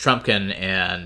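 plain reading voice

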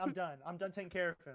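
ordinary talk, nothing marked

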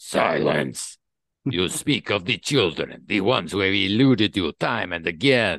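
put-on Russian accent like sizzling oil. Voicing a character while recapping a Psi Force scene, sizzling oil voice, Russian accent. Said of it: "Can you set your Russian accent to sizzling oil?".

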